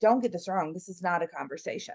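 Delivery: ordinary talk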